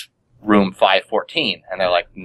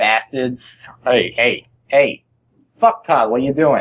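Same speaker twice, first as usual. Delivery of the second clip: Boston accent, slightly higher pitch; 4 semitones higher than usual. Told that being from Boston they can call people bastards: Boston accent. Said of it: "I get the accent real quick".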